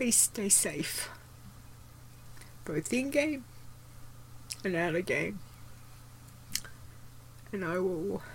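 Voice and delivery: high, tearful, emotional, teary delivery. Signing off and saying goodbye to the audience, teary. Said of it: "I'm a teary mess".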